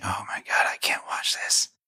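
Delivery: soft, exasperated whisper.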